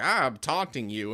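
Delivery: normal talking voice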